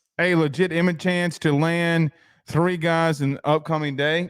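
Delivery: ordinary talk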